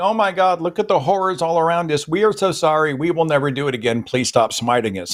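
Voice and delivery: high, abject, apologetic pleading cry. Retelling a Bible story, speaking as the Israelites: imitating pleading. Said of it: "And they're like".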